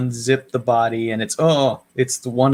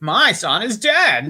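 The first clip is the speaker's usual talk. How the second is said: campy put-on voice, higher; 9 semitones higher than usual. Redoing the outburst when asked to make it more Paul Lynde-ish. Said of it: "More Paul Lindish".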